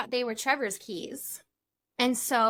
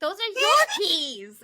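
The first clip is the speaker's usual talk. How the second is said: mock yelling, high and raised; 8 semitones higher, 3 dB louder than usual. Retelling finding the keys with a friend: imitating herself yelling. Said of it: "yelling at him".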